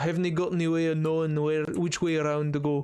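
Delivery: terrible fake Scottish accent. Speaker showing the closest they can get to scottish: bad scottish accent attempt. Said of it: "The closest that I could get for Scottish".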